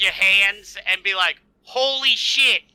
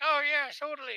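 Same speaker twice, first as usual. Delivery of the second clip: put-on, pitched-up copy of a woman's voice; 6 semitones higher, 11 dB quieter than usual. Retelling a reply from Ayun, imitating Ayun's way of talking. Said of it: "that's exactly how she talks".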